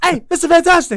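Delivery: shrill, very loud, high belted delivery. Pitching a casting pick, calling to Mister Fantastic: Kevin Hart impression as the Thing. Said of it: "Kevin Hart".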